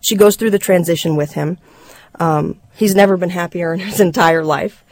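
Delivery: ordinary delivery, nothing marked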